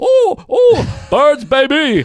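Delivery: put-on Indian accent, very high, very slow, sing-song. Mocking a movie's Indian psychiatrist cheering at an Eagles game: imitating an Indian accent. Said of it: "with the accent".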